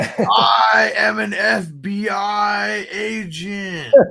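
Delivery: mock bad English accent, very high, I stretched. Mocking a movie actor's bad english accent. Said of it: "how bad our man Keanu is with doing a, uh, an English accent".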